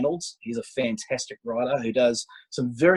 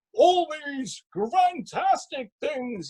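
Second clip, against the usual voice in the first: very high, slow, drawn-out voice. Praising a sci-fi series and quoting its famous actor: Brian Blessed impression. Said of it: "the big man himself from Flash Gordon".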